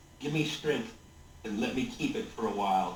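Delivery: low, very quiet, hushed mutter. Voicing a character casting a spell from a bag: very quiet muttering. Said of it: "very quietly".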